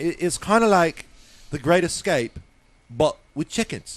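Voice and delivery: put-on heavy, all-out Cockney accent. Retelling a studio pitch, quoting Mister Park in a total Cockney accent. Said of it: "total Cockney accent".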